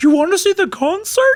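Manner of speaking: very high, sweet, cute costumed-mascot voice. Repeating Yuna's line in a mascot voice: imitating a mascot voice. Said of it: "a mascot voice a little bit".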